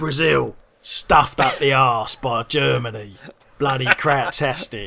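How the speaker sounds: loud, slow, booming bad narrator voice. Imagining a World Cup film narrated by Ray Winstone: Ray Winstone impression. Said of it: "less Ray Winston one than my usual impression".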